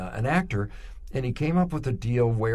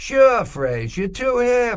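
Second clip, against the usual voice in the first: put-on Boston accent, very high, loud and drawn out; 12 semitones higher, 7 dB louder than usual. Retelling a man's reply when asked to use his slogan: boston accent. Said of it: "in that Boston accent".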